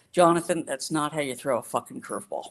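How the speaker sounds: mock exasperated, fed-up outburst, patience gone. Retelling what Sandy finally said to a boy: imitating Sandy sounding exasperated. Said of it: "He finally got exasperated".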